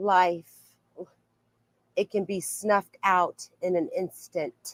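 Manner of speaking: utterly unruffled, dead calm, even deadpan delivery. Quoting a line from a podcast guest in her voice: imitating her dead calm voice. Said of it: "I'm gonna try to say it like her because it's just, like, this dead calm".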